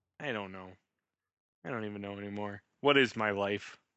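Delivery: with a sigh. Asked by the other speaker why they are sighing, answering while sighing. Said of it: "I'm sighing".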